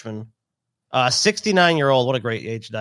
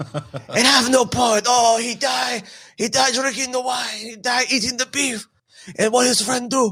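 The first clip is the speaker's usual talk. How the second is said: put-on hammy French accent, broken English, pitched up; 9 semitones higher than usual. Retelling how the french reacted to a death: mock french accent. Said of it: "Scotty's Frenchman sounds like a Middle Eastern guy".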